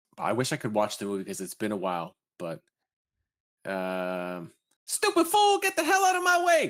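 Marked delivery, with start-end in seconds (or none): 4.9-6.7 shrill, blaring, very loud, very high character shout. Doing an impression of a movie character for a viewer's request: impression of a movie character. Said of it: "that was a good impression".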